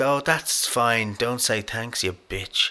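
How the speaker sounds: acted delivery through gritted teeth. Retelling what a mother said after another car didn't say thanks, through gritted teeth. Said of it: "real kind of through gritted teeth".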